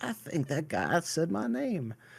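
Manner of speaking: put-on Southern US accent, high and sing-song. Retelling a drugged woman waking in a hospital bed, in a put-on southern accent. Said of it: "Why did you make her southern?".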